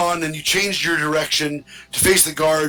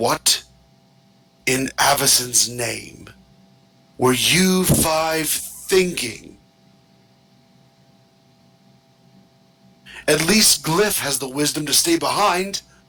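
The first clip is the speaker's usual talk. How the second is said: furious, fuming, reproachful tone. A game master voices the parish priest confronting the party: fuming. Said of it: "who is fuming".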